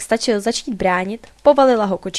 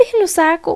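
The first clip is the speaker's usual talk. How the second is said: shrill, high-pitched squealing outburst; 8 semitones higher than usual. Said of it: "pištěla kočička".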